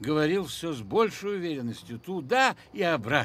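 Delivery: ordinary delivery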